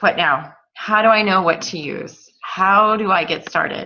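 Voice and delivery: ordinary talk, nothing marked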